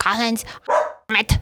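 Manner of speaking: mock-angry scolding tone. Retelling the story of the dog getting out, imitating angry Mom. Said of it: "I can be Mom".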